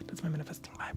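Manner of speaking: speaking in a whisper. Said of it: "why am I whispering?".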